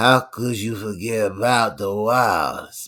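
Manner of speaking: put-on slow drawling New Orleans Creole accent. Asked to do a movie character's voice, imitating him: Cerrone voice with Creole accent. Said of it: "it's like Creole. Like, there's definitely some New Orleans in there".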